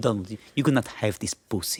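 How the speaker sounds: line delivered in a put-on Spanish accent. Voicing a character in a joke bit, Spanish accent. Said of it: "I don't know why she's Spanish all of a sudden".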